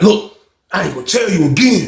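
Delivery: mock whispering. Retelling what Slim said through the wall: imitating someone whispering. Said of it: "he trying to whisper".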